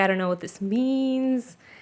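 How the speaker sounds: tearful, upset voice, crying. Recounting telling their mom about a confusing experience, retelling crying. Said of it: "I was like crying".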